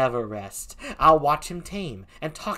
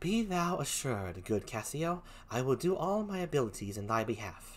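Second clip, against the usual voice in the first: hushed, very soft, gently sultry, kind voice; 10 dB quieter than usual. Reading the play aloud, voicing Desdemona reassuring Cassio, soft-spoken and sultry. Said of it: "Desdemona talks like this, very soft-spoken, a little sultry, but very kind".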